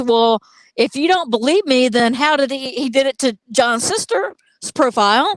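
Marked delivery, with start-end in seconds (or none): none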